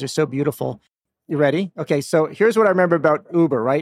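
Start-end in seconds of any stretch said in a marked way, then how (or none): 0.0-0.8 choking up with emotion, quieter. Speaker reacting to stories just shared with listeners, choking up. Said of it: "I'm just about choking up on these stories".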